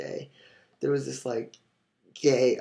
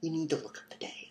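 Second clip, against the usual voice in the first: mock dramatic tone, higher and quieter; 4 semitones higher, 7 dB quieter than usual. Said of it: "In this very dramatic".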